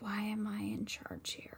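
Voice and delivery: hushed, sotto voce whisper under the breath. Put in charge, a player's character turns to another character, sotto voce. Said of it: "sotto voce".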